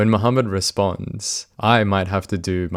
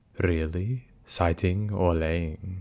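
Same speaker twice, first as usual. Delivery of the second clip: put-on, creepy, hushed predator voice; 6 dB quieter than usual. Reading out chat messages and answering them: creepy predator voice. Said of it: "combine it with the predator voice".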